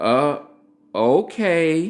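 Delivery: put-on reluctant, hesitant tone. Retelling how his wife answered his plan: imitating wife's reluctant okay. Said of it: "It sounded like this".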